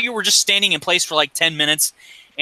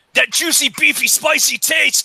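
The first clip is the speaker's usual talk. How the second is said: very high, squeaky voice as if on helium; 11 semitones higher than usual. Joking with others on a live stream, do a Macho Man Randy Savage voice. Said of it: "Macho Man Randy Savage talking on the live stream".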